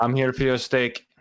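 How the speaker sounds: mock, fake European accent. Imagining him walking into a Texas place, speaking in a put-on European accent. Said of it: "with that accent".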